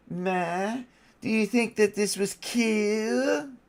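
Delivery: put-on cartoon character voice. Speaker threatens viewers with the voice, then does it, Cartman voice. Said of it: "Don't make me do the Cartman voice".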